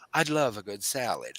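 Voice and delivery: low, put-on, uppity bougie affectation. Teasing someone who suddenly turns bougie, in a mock-bougie voice. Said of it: "suddenly turn all bougie and go".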